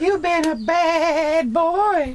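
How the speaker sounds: very high-pitched, loud Southern drawl. Doing the female teacher in a comedy bit, in a Southern drawl. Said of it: "And that's Southern drawl".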